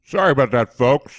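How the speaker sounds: talking with mouth full of food. Coming back from a pause, apologizing to listeners: talking with mouth full. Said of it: "as you can hear, I've got shit in my mouth".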